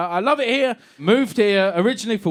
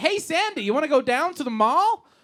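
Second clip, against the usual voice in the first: mock child's American accent, higher; 7 semitones higher, 3 dB quieter than usual. Retelling a school Grease production, kids in an American accent. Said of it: "doing an American accent".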